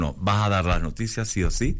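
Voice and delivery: ordinary talk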